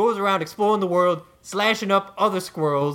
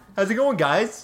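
cartoon giraffe voice, hip-hop style, New York. Bursting in on the others' recording as a hip-hop giraffe: New York Giraffe voice. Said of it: "New York Giraffe introducing himself over and over".

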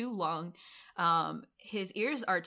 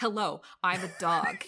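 put-on flat movie star voice, louder; 5 dB louder than usual. Imitating Bruce Willis voicing a dog: imitating Bruce Willis. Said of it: "he's just like".

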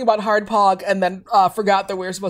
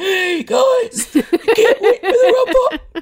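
very high, slow speech spoken while inhaling; 11 semitones higher, 3 dB louder than usual. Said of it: "he's breathing in while he's talking".

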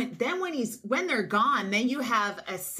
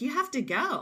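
put-on very soft-spoken voice, higher; 4 semitones higher than usual. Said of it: "I kinda just said it very softly".

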